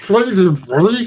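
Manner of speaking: very high-pitched, wet, bubbling, gurgling voice. Voicing Garthus greeting Lars with blood in his helmet. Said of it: "say that more like somebody who has like blood in their helmet".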